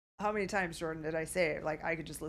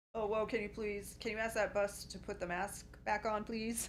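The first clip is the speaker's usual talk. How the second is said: ordinary talk, nothing marked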